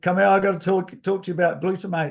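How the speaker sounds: acted-out huge booming voice, loud and fast. Recalling being called over in a triathlon crowd: imitating Grant's huge voice. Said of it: "in his his huge voice".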